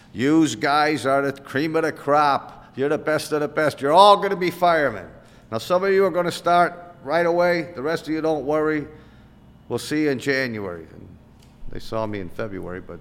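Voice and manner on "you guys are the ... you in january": put-on thick, heavy, broad Chicago accent, loud and high. Retelling a man addressing a room of would-be firemen in Chicago, thick Chicago accent. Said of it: "this guy comes out with this thick Chicago accent".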